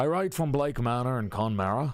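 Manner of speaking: attempted Irish accent. Reading a letter aloud while practicing an irish accent. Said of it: "We're we're practicing an Irish accent".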